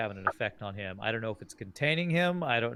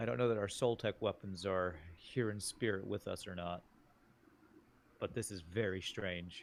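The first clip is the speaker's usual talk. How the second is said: hushed, quiet, soft voice, low and subdued; 3 semitones lower, 8 dB quieter than usual. In a role-play game, a character speaks to a companion in a quiet voice. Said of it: "kind of in a quiet voice to Doc".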